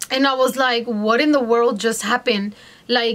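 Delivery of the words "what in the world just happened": usual speaking voice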